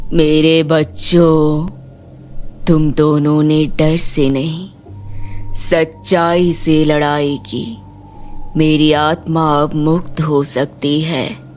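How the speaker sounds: calm, serene, ghostly spirit voice. A grandfather's spirit rising from a well speaks to two grandchildren, calm ghostly spirit voice. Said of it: "तभी कुएं से तेज रोशनी निकलती है और एक भयानक पर शांत आत्मा प्रकट होती है। जमींदार जी। / बहुत साल पहले तुम्हारे नाना इस गांव के जमींदार थे, नेक दिल पर थोड़ा सख्त। / हाँ बेटी, / आप सच में हमारे नाना जी ह".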